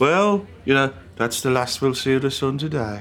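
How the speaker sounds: put-on Birmingham accent. Quoting a comic who called it the great accent to complain in: Birmingham accent. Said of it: "had a brilliant Birmingham accent".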